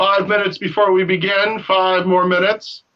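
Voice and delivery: big booming voice. Retelling a man calling out from outside the tent before the start, imitating a big booming voice. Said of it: "you hear his big booming voice".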